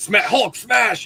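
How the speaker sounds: put-on high kid monster voice. Retelling a friend as a kid playing with a Hulk toy: Hulk voice. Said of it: "He's doing the voice".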